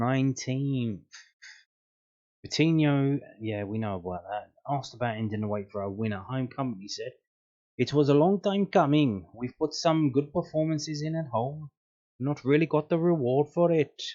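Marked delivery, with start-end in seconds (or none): 7.8-14.0 put-on raised, pitched-up Dutch accent. Speaker reads out Kompany's post-match quote, doing Kompany in a Dutch accent. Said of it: "I'm just trying to do a Dutch accent".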